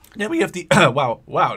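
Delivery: cracking voice. Listing the weapons of the armor unit when the voice cracks. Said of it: "voice crack".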